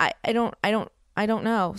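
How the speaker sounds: acted crying, stammering and tripping over words, panicked. Retelling panicking over a missing computer, imitating herself crying. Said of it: "I start crying".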